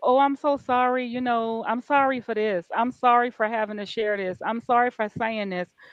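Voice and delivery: play-acted, apologetic, sorry-sounding tone. Recalling how she used to apologize for sharing things, imitating an apologetic tone. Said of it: "it used to be apologetically like".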